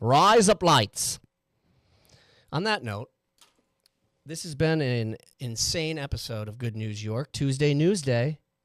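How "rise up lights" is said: loud, quick Australian accent, words run together. Finishing a wordplay bit before closing the episode, australian accent. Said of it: "with an Australian accent".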